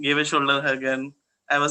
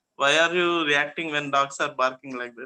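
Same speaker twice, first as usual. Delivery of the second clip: ordinary talk, nothing marked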